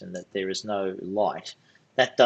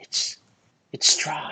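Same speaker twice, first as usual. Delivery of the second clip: hushed, breathy whisper; 7 semitones higher than usual. Narrator voicing a character who whispers to a player's character, whispering. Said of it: "She whispers to you".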